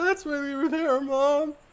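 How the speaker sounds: mock crying, voice breaking, pitched way up. Retelling a movie scene where the kid falls apart to her mom, imitating tearful breakdown. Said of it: "falls apart and goes like".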